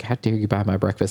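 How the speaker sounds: playful, teasing mock outrage. Retelling what a breakfast friend said, imitating a teasing scold.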